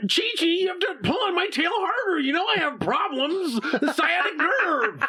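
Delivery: very high anime hero voice. Asked to make Goku say a line to Chi-Chi, perform it in a Goku voice. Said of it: "can you make Goku say".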